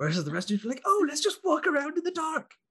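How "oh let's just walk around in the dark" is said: put-on voice, very high and squeaky. Mocking how the rest of the group talks, a Cork impression. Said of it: "That was my impression of Cork".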